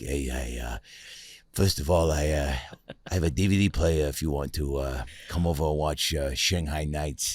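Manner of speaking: put-on very low, soft, light East Coast accent. Showing how a guy in a live stream chat sounds, in a little East Coasty voice. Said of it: "He's a little East Coasty".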